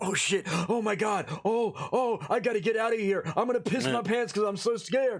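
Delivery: put-on frantic panic, breathless and heavy-breathing. Mocking how other ghost hunters act scared: mock scared panic with heavy breathing. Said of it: "Heavy breathing bullshit".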